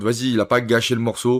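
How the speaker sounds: normal talking voice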